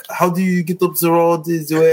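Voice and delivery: put-on French accent. Retelling asking for directions abroad: imitating own english in french accent. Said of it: "I would just say words in English in a French accent".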